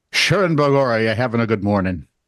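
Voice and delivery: Irish accent imitated by an American speaker. Retelling how Americans greet an Irish comedian, in an American's put-on Irish accent. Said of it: "has to do my accent back to me".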